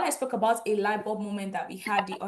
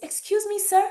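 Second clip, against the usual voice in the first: small, tiny, very high timid little voice; 11 semitones higher, 6 dB louder than usual. Retelling how, as a teenager, the speaker addressed a big man littering, in a tiny voice. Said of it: "I went with my tiny voice".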